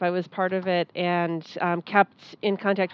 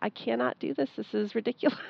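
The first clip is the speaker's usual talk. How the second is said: put-on hushed, tearful whisper while crying; 3 semitones higher, 8 dB quieter than usual. Recalling the day she was on the phone: imitating someone crying. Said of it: "she was on the phone crying".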